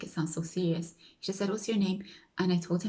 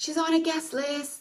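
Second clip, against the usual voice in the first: very loud, very high announcer-style call-out; 10 semitones higher than usual. Retelling a man calling out to the front of the queue, imitating a very loud call. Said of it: "he says in a very loud voice".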